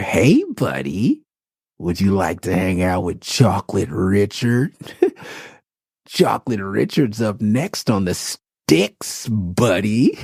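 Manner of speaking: put-on creepy voice, slow, swooping, sing-song. Recalling how Chocolate Richard threw players off in Tekken, creepy Chocolate Richard voice. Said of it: "he would just do this, like, real creepy way".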